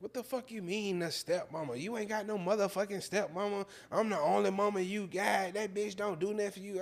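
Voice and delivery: mock furious, very high-pitched, loud tirade. Retelling how his mother reacted to hearing about the stepmama: imitating mother spazzing out. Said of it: "She spazzed out".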